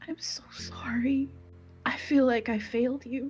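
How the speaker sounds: hushed whisper. Letting go of a lantern, a character apologizes: whispering. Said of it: "And she whispers".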